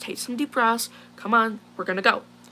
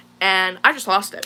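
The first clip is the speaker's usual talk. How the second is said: plain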